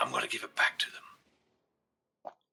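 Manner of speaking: low, quiet, hushed whisper. A player voicing his character, speaking to another character in Elvish: quiet whisper. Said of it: "in quiet whisper in Elvish".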